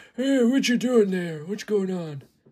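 put-on old-time radio style old man character voice. Speaker demonstrating the old man voice they do, in old man voice. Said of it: "My old man".

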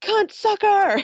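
very high, shrill, piercing scream. Telling about a man in a dining car, acting out his line: retelling a scream. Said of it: "So he screams".

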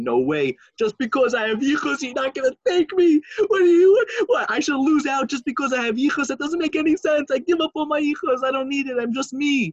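crying, high-pitched begging. Retelling how a begging student on the floor pleaded: retelling crying pleas. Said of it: "he's crying and sobbing and".

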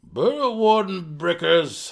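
grim tone. Belwar explains to Drizzt, grimly. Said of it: "Belwar explained to Drizzt grimly".

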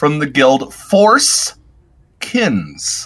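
slow, careful, deliberate, word by word. Speaker naming a guild carefully so as not to misspeak, speaking slowly. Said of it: "I got to say this slowly".

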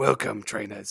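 gravelly, rasping, monstrous, half-British voice. Greeting trainers, attempting a grizzly character voice: gravelly Professor Oak voice. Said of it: "I tried to do like a grizzly, like Professor Oak, almost British accent, but it sounded like a monster".

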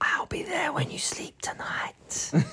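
intimate, naughty, soft, sweet whisper. Asked to whisper something sweet into the listeners' ears: whisper. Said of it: "whisper something sweet and naughty into their ears".

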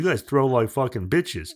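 blunt, scolding coaching-dad voice. Retelling how his dad coached the kids: imitating his dad coaching. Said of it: "this is how I would have said it in his".

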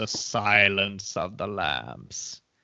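slow, eerie, spooky, haunting intoning. Announcing the Best Picture winner after "the Oscar goes to": put-on haunting voice. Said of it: "You can only say it in a haunting way".

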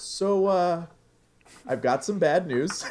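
play-acted bashful tone, very high. Retelling how someone broke bad news after recording: imitating a sheepish tone.

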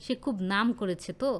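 plain

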